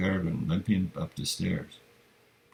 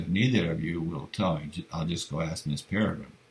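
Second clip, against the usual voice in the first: ordinary delivery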